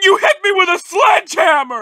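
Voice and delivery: crying, very high, loud sobbing wail. Complaining after being hit with a sledgehammer: crying while talking. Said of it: "I'm crying!".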